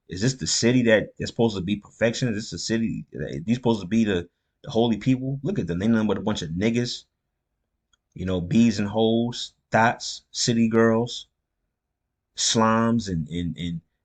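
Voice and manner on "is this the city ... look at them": plain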